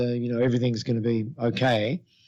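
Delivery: ordinary delivery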